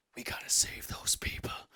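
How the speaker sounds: hushed, breathy whisper with an urgent tone. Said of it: "and he goes".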